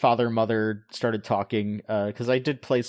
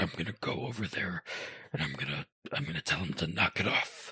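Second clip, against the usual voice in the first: hushed, quiet put-on game-character voice; 4 semitones lower, 9 dB quieter than usual. Retelling their reaction while playing, busting out a Golem impression. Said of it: "busted out that Golem impression".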